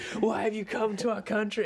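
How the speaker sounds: put-on scared voice, loud and high.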